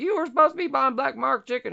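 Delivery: mock shrill, very high-pitched yelling. Retelling an argument between two brothers: imitating someone yelling. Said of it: "And he's yelling".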